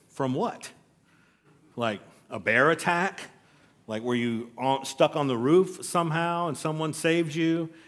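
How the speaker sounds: normal talking voice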